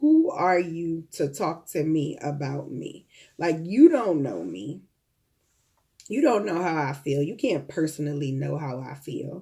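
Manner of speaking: ordinary talk, nothing marked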